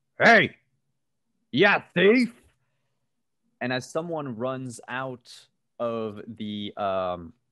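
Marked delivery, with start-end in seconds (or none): 0.2-2.3 rough, gruff holler, very loud. Narrating a scene, voicing someone who shouts out at a thief, gruff shout. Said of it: "gruff voice. ... someone shouts out".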